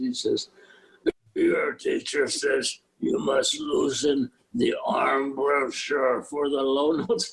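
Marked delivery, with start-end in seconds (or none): 1.3-7.3 slow, gruff, gravelly growl. Retelling how Reiner thumbs through the book and speaks, imitating Reiner's gravelly growl. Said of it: "he growls to me in this gravelly voice".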